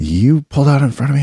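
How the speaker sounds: high-pitched yell. A driver hops out of his car and yells in the speaker's window; retelling the yell. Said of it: "he's like yelling in my window".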